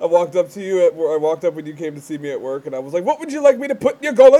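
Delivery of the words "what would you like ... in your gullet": very loud, pitched-up, put-on British accent. Retelling what they said when a friend visited them at work, British accent. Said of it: "I've been talking in a British".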